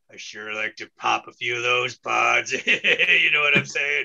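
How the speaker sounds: very low, lecherous, leering creep voice. Introducing a comedy character, then voicing him: put-on leering pervert character voice. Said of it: "and now it's time for Arthur, the vegan pervert".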